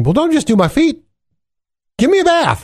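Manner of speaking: very high, overdone, over-the-top eager voice. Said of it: "then Peter, of course, goes to the other extreme".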